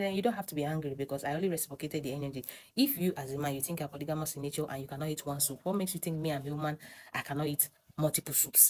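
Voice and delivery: plain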